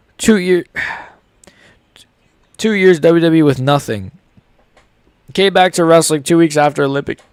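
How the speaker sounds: speaking with hiccups. Speaker with the hiccups continuing a story, hiccuping. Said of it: "I hiccuped again".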